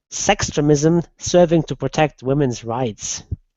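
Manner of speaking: usual speaking voice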